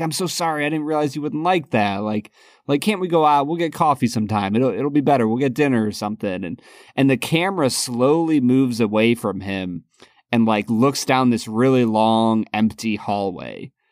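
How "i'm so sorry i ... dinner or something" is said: fast, rushed, apologetic begging tone. Describing a film scene, act out a man on a payphone: retelling a character begging. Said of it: "he's kind of begging".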